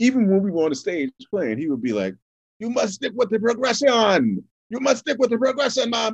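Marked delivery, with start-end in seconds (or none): 2.6-6.1 higher-pitched put-on Jamaican accent. Retelling what he always said to them while playing on stage: imitating a Jamaican accent. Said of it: "I apologize already for my Jamaican".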